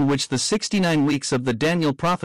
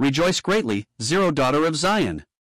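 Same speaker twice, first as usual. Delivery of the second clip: usual speaking voice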